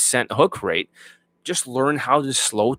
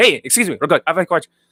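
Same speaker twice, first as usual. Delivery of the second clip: fast, hurried, pitched-up words bunched together; 5 semitones higher, 3 dB louder than usual. Showing the wrong way to ask a stranger a question, super fast rushed speech. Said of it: "rather than going like super fast".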